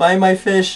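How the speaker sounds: play-acted high, carrying market vendor shout. Retelling a crowded fish market, imitating vendors screaming. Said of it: "they're all like".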